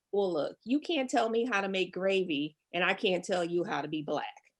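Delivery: plain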